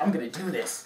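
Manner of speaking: mock dead-serious, grave, determined tone. Retelling a guy about to try the stripper pole: imitating someone getting all serious. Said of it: "he got all serious".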